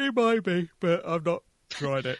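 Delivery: talking through a yawn. Replying to a game recommendation, speaking through a yawn. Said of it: "sorry, I'm yawning".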